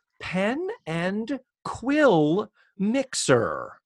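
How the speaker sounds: very slow, drawn-out, deliberate wording. Quoting someone declining plans for a mixer: slowly spoken. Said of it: "I said that slowly".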